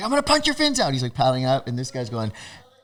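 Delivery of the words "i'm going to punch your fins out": very high-pitched, shrill, hollered yell. Retelling a surf argument, imitating Roadblock yelling a threat. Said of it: "Roadblock's still yelling at me".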